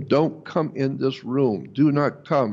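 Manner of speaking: ordinary talk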